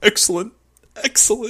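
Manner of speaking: chuckling, laughing, pleased and delighted approval. Retelling how a man reacted to a deduction, imitating someone laughing. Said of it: "And he just laughs".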